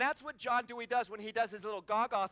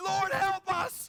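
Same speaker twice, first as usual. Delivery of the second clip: mock, high, full-voice desperate scream; 9 semitones higher, 6 dB louder than usual. Speaker recalls screaming during a ride on the highway, retelling a loud scream. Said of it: "I started screaming real loud".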